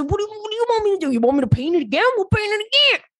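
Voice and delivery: fake American Southern accent. Quoting a man offering to repaint the apartment, put-on Southern accent. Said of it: "I don't know why you got Southern at the end of that".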